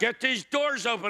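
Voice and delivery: acted-out shouting. Telling a story of being stuck in a lift, re-enacting yelling. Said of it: "I'm yelling".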